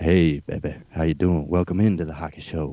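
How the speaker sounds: very low, deep, sultry seductive voice. Showing the other speaker how deep to go, in a sex line deep voice. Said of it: "You got to go like sex line deep".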